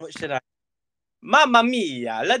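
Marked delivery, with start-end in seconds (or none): 1.2-2.4 put-on Italian accent, high, drawn-out mia. Recording a sound file the other speaker will use as a ringtone, Italian accent. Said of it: "your Italian accent".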